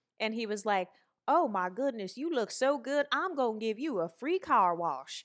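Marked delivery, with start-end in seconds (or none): 1.3-5.3 put-on old man voice with Southern American accent. Retelling how the owner of the place greeted her, imitating Stan's southern accent. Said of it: "he had this southern accent".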